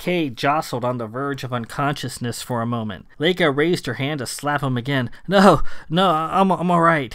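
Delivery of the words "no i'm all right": stuttering, stammering, higher and slower. Nearly knocked unconscious by a slap, a man answers Laika, stammering. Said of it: "he stammered".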